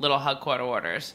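Long Island pronunciation. Naming a nineties drink to another speaker: Long Island accent. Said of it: "Are you saying this in a Long Island accent".

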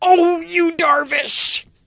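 high, cheering cry like a rooting fan. Imitating Monica rooting for the Dodgers at the World Series. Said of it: "what would it sound like if Monica was".

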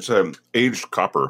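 talking with mouth full. Answering the host's question about the tequila glass, talking with a mouthful. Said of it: "I've got some in my mouth right now".

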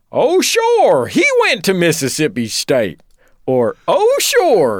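loud, swooping, snooty preppy voice. You show what you say on seeing someone in college clothing, in a Louis Winthorpe voice. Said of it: "I should do the voice".

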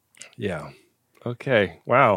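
let-down, deflated, disappointed, dropping low. After a bad die roll in the game, [name] reacts, disappointed. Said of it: "you could really hear the disappointment in [name]'s voice".

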